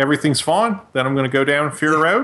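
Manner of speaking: mock laid-back Australian accent. Imitating how a rich, chilled-out Australian would sound: imitating an Australian. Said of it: "'cause he's Australian, his voice would be like".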